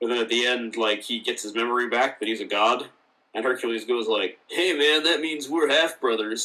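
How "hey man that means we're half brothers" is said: talking like a surfer dude. Speaker retells a line from an episode, in Hercules surfer dude voice. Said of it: "like a real surfer dude kind of voice".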